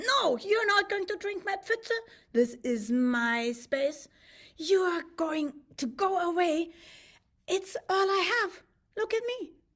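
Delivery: high, furious little lady fish voice. Telling a story, the lady fish shouting at the buffalo: angry lady fish. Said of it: "she gets really angry".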